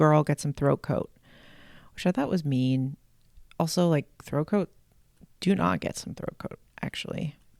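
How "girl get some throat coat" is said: ordinary talk, nothing marked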